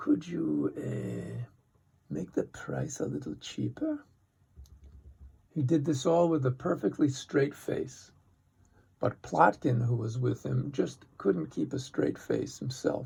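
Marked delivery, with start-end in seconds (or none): 0.0-4.0 low, half-whispered, under the breath. Retelling a boy asking a ticket clerk for a discount: imitating a low voice. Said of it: "in a low voice".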